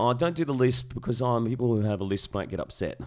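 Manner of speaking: ordinary talk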